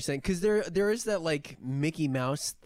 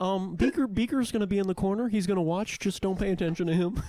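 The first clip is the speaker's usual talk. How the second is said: put-on frog puppet voice; 3 semitones higher than usual. Playing a sleazy casting director in a comedy bit: playing Kermit the Frog. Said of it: "I don't like this, Kermit".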